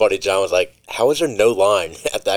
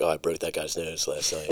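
put-on mutter under breath, lower and quieter; 4 semitones lower, 11 dB quieter than usual. Retelling a character's line from a movie scene: imitating muttering under breath. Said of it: "He just kinda says it under his breath".

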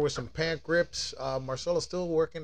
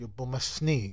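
bad put-on Portuguese accent; 3 semitones lower than usual. Joking around, the speaker tries out a bad Portuguese accent. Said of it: "I say it in Portuguese".

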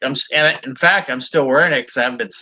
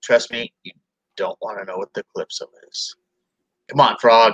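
low, flat, expressionless deadpan delivery; 5 semitones lower than usual. Narrator reading Knockout's reply to Super Frog, deadpan. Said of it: "with his deadpan face and says".

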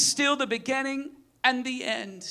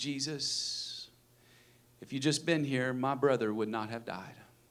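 put-on cool, collected, calm, very low, quiet voice; 13 semitones lower, 8 dB quieter than usual. Retelling what Mary said to Jesus, acting it out mock calm, cool and collected. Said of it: "in this calm cool collected".

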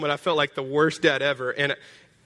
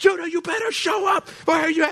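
mock very high, frantic screaming. Retelling how she ran outside calling for Judah, imitating her screaming. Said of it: "She's screaming".

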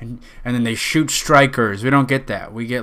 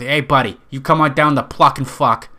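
clumsy, bad, fake, put-on Boston accent. Making up a pitch for a shop, bad Boston accent. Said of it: "I don't even know what Boston is".

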